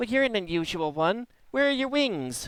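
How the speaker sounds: very high, giggly little pixie voice. Narrating a giggling voice that greets the character, in a high-pitched giggling voice. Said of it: "a high pitched voice uh, giggles and and says".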